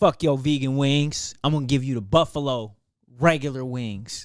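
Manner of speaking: rude, angry swearing. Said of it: "They're like".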